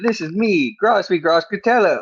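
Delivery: poor put-on Brooklyn accent, high. Introducing a persona for this episode, in a bad Brooklyn accent. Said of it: "I'm from Brooklyn this episode, even though I can't do a Brooklyn accent".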